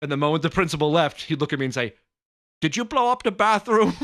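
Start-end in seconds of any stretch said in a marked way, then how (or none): 2.6-3.9 put-on heavy English accent, laid on thick, raised and high. Retelling what Mr. LaGuardia asked him after the principal left, thick English accent. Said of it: "a really thick English accent".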